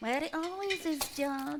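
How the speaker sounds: very quiet muttering under the breath. Answering someone who asks where his key is, under her breath. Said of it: "(under her breath)".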